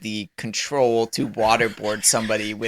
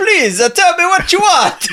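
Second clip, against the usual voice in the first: fake French accent, much higher and louder; 8 dB louder than usual. In the game, a character asks a captive what they want, put-on French accent. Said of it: "When did he become French?".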